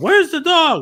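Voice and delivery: very high, loud, demanding yell. Retelling how Superman yells at Luthor: imitating Superman yelling. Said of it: "he's yelling at Luthor".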